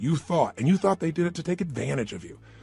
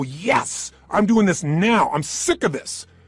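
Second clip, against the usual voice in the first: very slow, forceful, emphatic, hard-stressed delivery; 2 semitones higher, 4 dB louder than usual. Showing a radical change in body and feeling: radical energetic burst. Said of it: "if you make a radical change".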